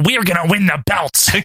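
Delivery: put-on doofy voice. Speaker recapping a promo, quoting Warlord in a doofy Warlord voice. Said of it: "Warlord is all doofy as usual".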